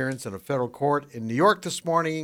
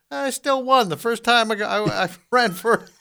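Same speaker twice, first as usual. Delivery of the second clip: high, loud, bad, fake New Yorker accent. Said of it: "what do you call that accent right there that you're doing".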